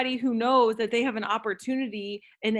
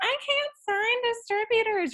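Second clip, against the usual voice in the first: grating, very high, annoying put-on voice; 12 semitones higher than usual. Giving a tip, speaker voices a doubt in an annoying put-on voice. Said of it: "you have to say it with that voice because then you just sound annoying".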